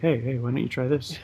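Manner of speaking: very quiet, soft, gentle, hushed voice. Showing how to tell her something instead of barking orders, in a nice, soft voice. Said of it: "in a nice, soft voice".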